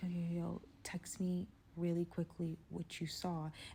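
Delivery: soft, slow, whispered words. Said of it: "I'm whispering".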